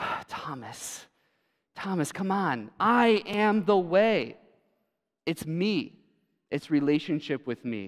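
slow, weary, patient coaxing with sighs. Retelling Jesus answering Thomas: imitating Jesus sighing. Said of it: "we hear Jesus almost just sigh".

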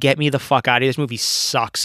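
ordinary talk, nothing marked

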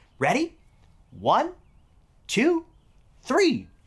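ordinary talk

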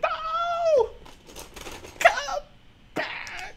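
put-on very high, crying young heroine voice. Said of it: "My young Ray impression".

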